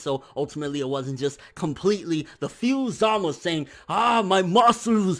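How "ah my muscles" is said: put-on Austrian accent, higher pitch. Voicing Zama's line about his muscles in a put-on Arnold Schwarzenegger accent. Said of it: "I just made him sound like Arnold Schwarzenegger".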